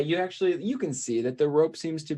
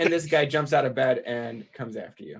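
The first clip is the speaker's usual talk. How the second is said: ordinary delivery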